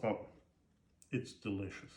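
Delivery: talking with full mouth. Tasting fresh sourdough bread, talking with a full mouth. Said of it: "I shouldn't talk with a full mouth".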